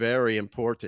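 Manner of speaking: expressionless, flat, level deadpan delivery. Voicing two characters who look at the camera: deadpan. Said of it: "a deadpan way".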